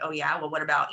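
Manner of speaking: mock muttering under breath. Retelling a reply to her husband: imitating own mumbling under breath. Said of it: "mumbling under my breath".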